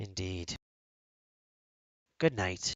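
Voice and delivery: put-on New Zealand accent. Voicing a patron talking to a player's character: new zealand accent. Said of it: "More characters with, like, a New Zealand accent".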